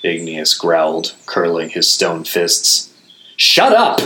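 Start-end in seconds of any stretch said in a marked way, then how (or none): 3.4-4.0 very high, loud howled outburst. The narrator turns on companions after Igneous's outburst, howling. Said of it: "I howled".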